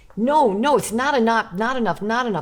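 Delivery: mock upset insistence. Retelling a piano teacher demanding more during a lesson: imitating an upset teacher. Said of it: "he was getting so upset with me".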